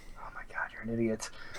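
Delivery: fast, soft, exasperated whisper.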